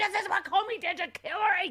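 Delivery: high mock yell with laughter.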